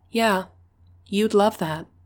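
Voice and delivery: otherworldly tone, still sassy. Portia answers the man who wants her hanging on him: higher, ethereal voice. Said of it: "a higher, more ethereal voice made its way out of my mouth".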